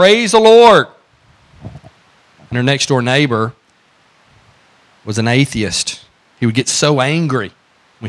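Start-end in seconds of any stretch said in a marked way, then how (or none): 0.0-0.9 very high, loud hollering shout. Telling of a woman of faith shouting from her front porch: retelling a shout. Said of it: "she would shout".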